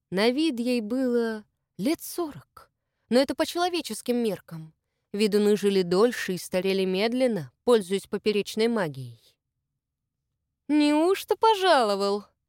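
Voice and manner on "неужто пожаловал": mocking, ironic tone, pitched up. Greeting an arriving man without looking at his companion, ironic. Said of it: "иронично спросила Любава".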